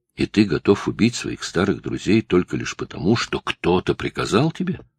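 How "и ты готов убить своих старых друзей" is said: ordinary delivery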